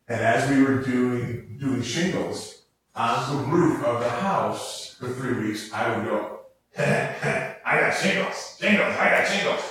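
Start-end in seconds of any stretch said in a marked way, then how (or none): 6.8-9.6 silly put-on dumb cadence, pitched up. Retelling a joke voice used while shingling a roof: dumb put-on cadence. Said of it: "they had this really dumb cadence. And I'm going to do it for you".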